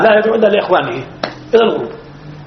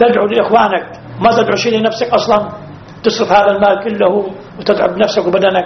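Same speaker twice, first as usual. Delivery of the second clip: usual speaking voice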